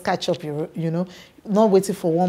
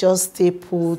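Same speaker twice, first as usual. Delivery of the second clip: plain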